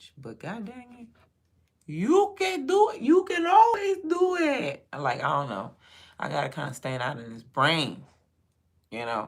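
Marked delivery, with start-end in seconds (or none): 1.9-4.9 acted-out, very high, booming, drawn-out loud cheer. Retelling what was said to a son getting ready for school: retelling own loud encouragement. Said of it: "real loud this morning".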